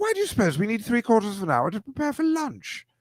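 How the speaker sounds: put-on very high, prim, sing-song, proper British child accent. Joking about kindergarteners who talk so properly, the speaker imitates one in a proper british kid accent. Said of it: "talks like that in kindergarten so properly".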